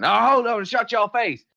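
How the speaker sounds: rowdy, angry yell, shrill, high and booming. Narrator voices ranchers interrupting a man during a speech, ranchers shouting. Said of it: "some of the ranchers start shouting".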